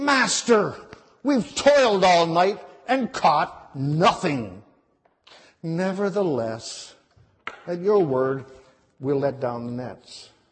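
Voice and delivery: exasperated, frustrated and disappointed, let-down tone. The speaker reads Peter's reply to the Master, acting out Peter's frustrated disappointment. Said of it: "this is how you should read this pasture".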